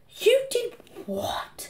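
soft, hushed whisper under the breath. A mother reacts as her son says he sold his brother, whispered. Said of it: "Whispered Mum".

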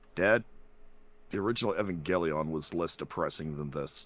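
mock flat, totally deadpan, expressionless delivery. Telling how his son reacted before leaving the room: deadpan imitation of his son. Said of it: "with a deadpan voice, and I'm gonna do my best I can to impersonate my son's voice".

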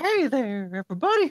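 creepy put-on cartoon voice. Speakers try Family Guy impressions, one doing Herbert; Herbert the Pervert voice. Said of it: "I'm Herbert the Pervert".

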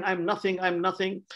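acted, overwhelmed crying out, overcome with humility. Telling a story of a man moved by god rolling on the floor, imitating him crying. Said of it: "he's crying".

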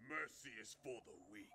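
put-on baby voice pitched deep. Answering a captive's plea for mercy, in a deep Baby Yoda voice. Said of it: "not the deep baby voice".

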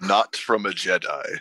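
deep dark-lord style voice. Asked to say hello, the speaker answers sounding like a Sith Lord. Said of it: "You sounded like a Sith Lord".

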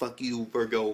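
plain

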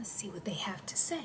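quick, little, hushed whisper. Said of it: "I don't know why I'm whispering".

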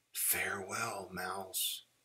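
barely audible, very quiet, faded, dropped whisper. Reading a story, Bear speaks to Mouse as his voice drops to a whisper. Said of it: "Bear's voice dropped to a whisper".

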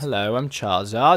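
fake British accent, laid on thick. When asked to do a British accent, replying in a put-on British accent. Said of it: "Do a British accent".

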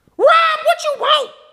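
irritated, openly angry. Answering a phone call from a tech company caller, angry. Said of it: "no need to be angry".

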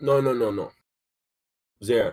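talking with mouth full while eating. In a conversation, the speaker answers while eating, talking with mouth full. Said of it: "Are you eating".

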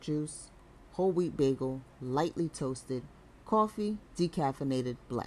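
ordinary delivery

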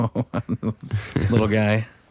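play-acted amused voice, slow, laughing through it. Acting out a woman laughing at someone in the outhouse: imitating a laughing woman. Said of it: "Is she laughing at you?".

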